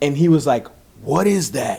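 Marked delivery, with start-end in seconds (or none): 1.0-1.8 put-on raspy voice like an old man. Retelling an event where Jerry Lauren pointed out his watch, Jerry Lauren's old raspy voice. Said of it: "In that like old raspy voice".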